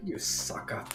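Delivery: hushed, very quiet, close whisper. Role-playing a character speaking into another character's ear, whispering. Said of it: "I whisper in his ear".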